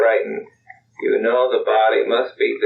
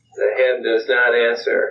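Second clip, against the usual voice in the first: plain reading voice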